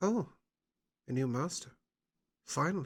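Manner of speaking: seductive snake creature voice. Narrating a winged snake speaking telepathically to a player: seductive winged snake voice. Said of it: "That's a very seductive sounding winged snake".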